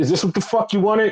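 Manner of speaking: high-pitched, shouted, confrontational yelling. Retelling a wrestling segment where one wrestler confronts another: imitating someone yelling. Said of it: "Yota Tsuji is yelling at him".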